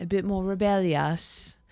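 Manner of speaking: clumsy, bad put-on British accent. Repeating a line about a band member: bad British accent. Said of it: "I cannot do a British accent".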